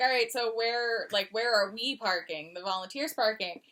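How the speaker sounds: ordinary talk, nothing marked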